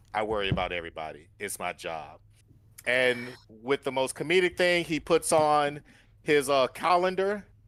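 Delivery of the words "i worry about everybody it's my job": grave, earnest, dead-serious, very low tone. Describing a character's reassurance to everyone, the speaker says his words in a very serious tone. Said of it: "In the most serious tone".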